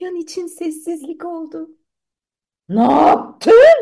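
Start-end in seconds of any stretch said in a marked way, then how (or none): 2.7-3.8 booming, very loud shout. Narrating a children's story, a king reacts to a soldier's report: shouted. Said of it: "diye bağırdı kral".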